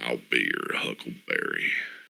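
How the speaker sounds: very low, hushed, soft, creaky and rough. Quoting a line in an impression, too deep Val Kilmer impression. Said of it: "A little too deep".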